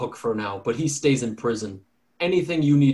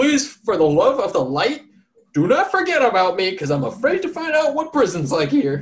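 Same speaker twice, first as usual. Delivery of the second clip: very high-pitched, yelled, begging holler; 9 semitones higher, 4 dB louder than usual. Voicing a prisoner dragged away by guards, yelling back to the party: yelling back, pleading. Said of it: "he yells back to you guys".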